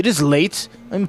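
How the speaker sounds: ordinary delivery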